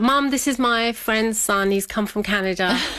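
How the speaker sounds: happy, chirpy voice.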